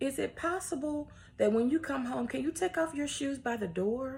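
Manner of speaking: soft, kindly voice. Rephrasing a household request the nicer way: sweet, gentle request. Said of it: "that was much sweeter than the other way that I said it".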